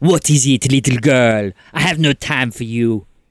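furious, enraged tone. Voicing Veronique turning on a player with Gallic fury. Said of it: "she turns to you and she says".

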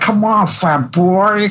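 very high-pitched, drawn-out taunting tone. Retelling a movie bully's taunt at a teammate: Mick's taunting voice. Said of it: "he got that voice".

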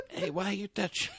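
put-on old Italian man accent. Joking about a shrunken actor being touched: old italian man voice. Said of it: "It's an old Italian man".

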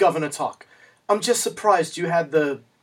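put-on English-sounding British accent. Retelling a film scene, imitating the character's British accent. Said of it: "she uses this inexplicable British accent".

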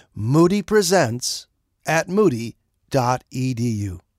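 spelled out slowly. Radio announcer repeating an email address for listeners, slowed down. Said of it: "Let me slow it down".

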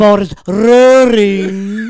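very loud, very slow, grand, booming voice. Retelling a teacher spinning a tennis ball: imitating engineering teacher Venkataraman. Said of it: "that's an incredible impression".

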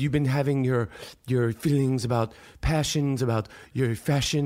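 very low, serious British interviewer-style voice. Retelling how the interviewer opened, imitating Zane Lowe's British accent. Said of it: "he's got a British ac-".

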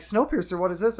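ordinary delivery

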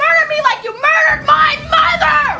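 screaming. Acting an argument after being slapped, screaming. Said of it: "she screams".

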